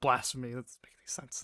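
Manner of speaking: muttering under breath. Reacting in character to a spell that failed: muttering under breath. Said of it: "under my breath".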